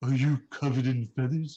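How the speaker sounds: creature voice parroting words back. Voicing a creature that parrots a player's question back: creature mimicking a player's words. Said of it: "She can mimic".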